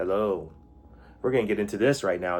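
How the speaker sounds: mock overly serious documentary narrator voice. Imitating his own stiff early podcasting: imitating a very serious documentary delivery. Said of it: "Just all very serious".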